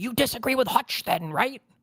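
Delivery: acted, very high-pitched screaming. Retelling how the other speaker cut off a guest: imitating someone screaming. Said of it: "You just started screaming".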